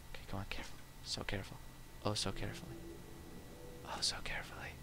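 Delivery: very quiet, careful whisper under the breath. Carefully moving items in a game so as not to spill them, whispering. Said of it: "Why am I whispering?".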